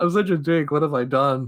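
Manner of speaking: play-acted, tearful, remorseful sobbing cry. Retelling a film's ending, speaker acts out the guy crying. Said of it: "the guy's just crying".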